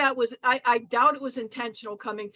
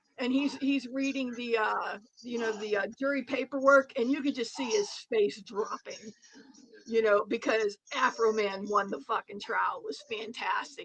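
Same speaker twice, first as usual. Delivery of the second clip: ordinary talk, nothing marked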